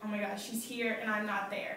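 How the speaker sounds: plain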